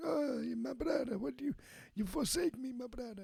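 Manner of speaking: very high, creaky, wounded, dramatic betrayed tone. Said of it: "this guy's like".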